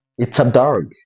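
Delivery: statement-like falling pitch on dog. Teaching English intonation in Kinyarwanda, falling pitch on dog. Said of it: "The intonation goes down".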